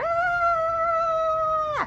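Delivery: very high put-on cat yell.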